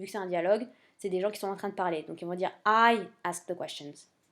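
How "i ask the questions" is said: heavy stress on the word "I", rest plain. English lesson on a dialogue line, stress on the word I. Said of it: "on va insister sur le I quand on va prononcer".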